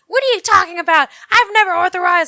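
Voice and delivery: very loud, high-pitched, furious angry outburst. Retelling a call with a sales lady, retelling an angry reply. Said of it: "And I got so mad".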